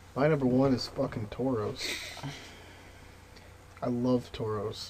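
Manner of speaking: downcast, joyless, depressed, glum delivery. Naming a top favorite Pokemon while sounding depressed. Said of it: "You sound so depressed".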